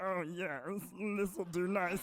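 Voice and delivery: camp cartoon alien voice. Showing what you say while wandering around your apartment, fabulous Marvin the Martian voice. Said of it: "a really like fabulous Marvin the Martian".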